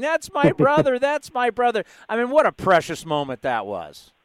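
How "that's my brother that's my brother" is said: play-acted, very high, tearful, overcome yell. Recounting a player's family reaction, imitating his sister yelling. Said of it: "and she's yelling".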